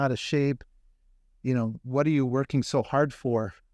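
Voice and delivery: normal talking voice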